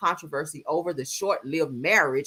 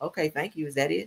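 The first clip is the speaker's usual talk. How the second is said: put-on unimpressed tone, quieter; 2 semitones lower, 5 dB quieter than usual. Retelling how a bride reacted to her wedding gift car, imitating an unimpressed reply. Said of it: "she was just standing there like".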